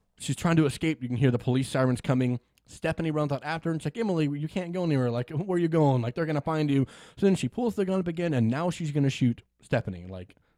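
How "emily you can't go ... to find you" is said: usual speaking voice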